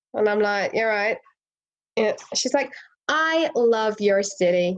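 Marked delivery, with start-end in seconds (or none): 3.0-4.7 very slow, gushing, bubbly put-on American accent. Retelling a chatty tourist talking to them in traffic, in a put-on american accent. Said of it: "this is my American accent".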